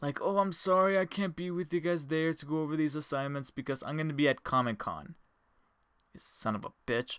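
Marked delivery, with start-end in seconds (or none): 0.2-5.1 mournful, lamenting, fake-sorry tone. Retelling the production sound teacher's excuse: imitating a lamentful tone. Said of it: "He was trying to sound all lamentful".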